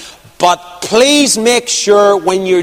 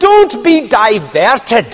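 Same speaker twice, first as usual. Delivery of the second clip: put-on strong, laid-on, big, swooping Scottish accent; 4 semitones higher than usual. Recalling what Alec told you on a night walk around the estate, in Alec's big Scottish accent. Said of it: "in his big Scottish accent".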